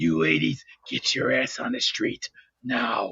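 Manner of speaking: voice dropped very low and rough. Doing a drill sergeant bit when asked about a vote: Gunnery Sergeant Highway voice. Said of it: "should I sound like Sergeant Gunnery Highway".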